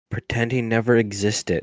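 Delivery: very quiet, slow, drawn-out secretive murmur. Telling another player in character to pretend someone never existed: very quiet. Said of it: "very quietly go".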